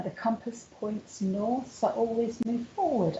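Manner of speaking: plain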